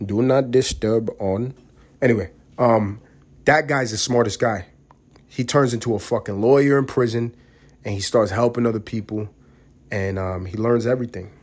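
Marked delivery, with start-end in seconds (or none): 0.0-1.5 slow, put-on Indian accent, recorded-prompt style. Imitating the guy from the do-not-disturb bit, in an Indian accent voice. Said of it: "the Indian fucking guy I got for the do not disturb thing".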